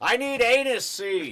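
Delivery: very loud, very high, booming voice. Retelling repeating a request after being misheard, in a loud booming voice. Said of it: "in a very loud, booming, outdoor teach motorcycle voice".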